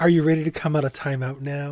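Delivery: put-on condescending tone. Retelling what Grissom says to Catherine: imitating Grissom condescending. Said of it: "he's very condescendingly".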